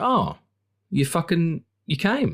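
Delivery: acted, very high, unbothered, unimpressed, swooping drawl. Retelling a film scene as the Green Knight: imitating a disaffected Green Knight. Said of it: "the Green Knight's almost, like, just disaffected by it".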